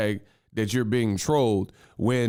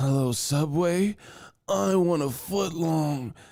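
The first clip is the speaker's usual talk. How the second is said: goofy, weird put-on voice pitched high; 5 semitones higher than usual. Recalling old prank calls to random numbers, doing a weird prank call voice. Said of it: "Like just just weird voices".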